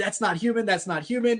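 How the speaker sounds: mild, restrained put-on scream, only hinted at. Retelling a driver's call to dispatch: imitating someone screaming. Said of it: "He's screaming".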